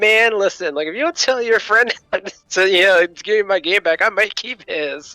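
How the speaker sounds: put-on playful laughing tone. Retelling a joking threat to a friend about a borrowed game: retelling a joke while laughing. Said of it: "and I'm laughing when I say it".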